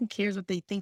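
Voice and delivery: normal talking voice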